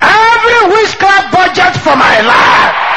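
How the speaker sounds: fiery, high-pitched, loud shout.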